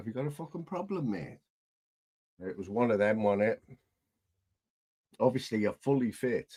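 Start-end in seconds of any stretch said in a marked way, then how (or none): 0.0-1.4 high, aggressive, confrontational lad voice. Retelling a stranger's challenge at a bus stop: imitating a confrontational lad. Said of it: "That's exactly how he said it".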